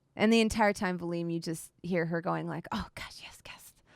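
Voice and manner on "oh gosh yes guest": hushed, airy, breathy, whispered animal voice. Voicing a big animal who hopes the guests brought treats: voicing an animal. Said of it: "I've made you voice so many animals today".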